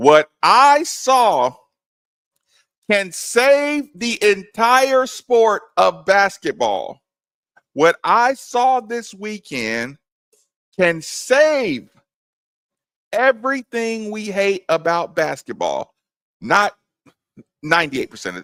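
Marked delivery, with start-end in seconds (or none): 0.0-15.9 slow, pitched-up, all-out passionate delivery with strong intonation. A show host tells Steve about the weekend's basketball, with full passion and intonation. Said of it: "with all the intonation and all the passion".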